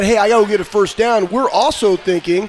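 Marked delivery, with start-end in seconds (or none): none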